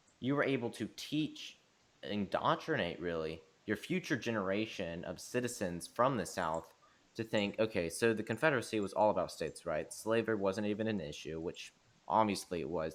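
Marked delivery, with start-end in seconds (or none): none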